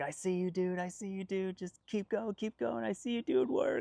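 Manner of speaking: very high, loud, encouraging cheering yell. Retelling a volunteer at the top cheering riders on, imitating him yelling. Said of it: "starts yelling".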